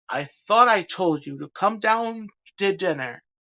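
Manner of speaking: beastly growling monster-like voice. Narrator voicing the beast pounding on Belle's door: growling. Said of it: "he growled".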